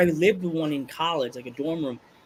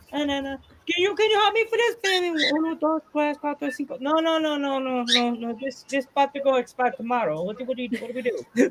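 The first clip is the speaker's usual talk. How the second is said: put-on old Italian man voice, pitched up; 7 semitones higher than usual. Acting out an old Italian man at a bodega figuring out a bill, imitating an old Italian man. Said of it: "an old Italian man trying to figure out a bill".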